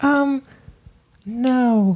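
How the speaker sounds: very high, hesitant, reluctant motherly voice. Imitating a parent refusing to be on the show: imitating mom's reluctant "no". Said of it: "that's your impression of your mom".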